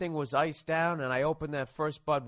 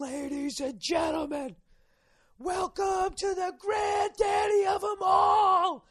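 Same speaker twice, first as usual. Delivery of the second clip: very high, very slow, drawn-out announcer-style yell. Retelling a friend's loud announcement at a tailgate: imitating Bartnick yelling loudly. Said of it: "he just yells at the top of his lungs".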